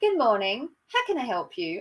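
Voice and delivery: very posh, put-on phone accent. Answering the phone at work as usual: put-on posh accent. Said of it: "And I put on this accent".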